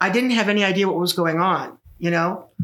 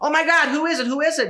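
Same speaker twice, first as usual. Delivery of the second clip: play-acted, very upset, high, rushed screaming; 11 semitones higher than usual. Recounting a call to the newsroom, acting out someone asking about Bowles, retelling a scream. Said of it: "And he's screaming".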